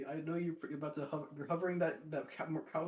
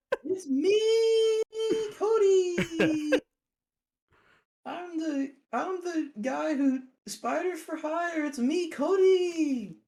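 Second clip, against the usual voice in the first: very high, very loud, shrill, drawn-out, slow delivery; 13 semitones higher, 10 dB louder than usual. Pretending to talk through the TV screen: imitating Cody's voice. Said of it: "That was a spot on impression".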